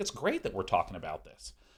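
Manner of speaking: bright, uplifting, positive, upbeat sing-song cheer. Demonstrating keeping your tone cheerful and positive, uplifting, upbeat tone. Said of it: "I'm actually stating things in a uplifting, upbeat way".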